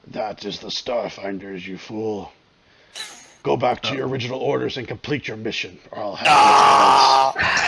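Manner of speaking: put-on very deep, scratchy, raspy voice. A narrator voices a reply coming back over static, in a very deep, scratchy voice. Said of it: "you hear a very deep, scratchy voice come back".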